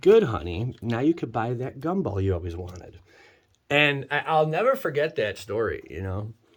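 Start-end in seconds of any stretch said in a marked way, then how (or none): 0.0-3.0 acted-out backhanded, passive-aggressive tone. Retelling her reply to earning twenty-five cents: imitating a passive-aggressive remark. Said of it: "passive aggressive".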